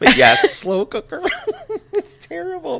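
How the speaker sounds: very high, loud words broken by laughter. Telling another speaker bad news, laughing while talking. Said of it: "I don't know why I'm laughing".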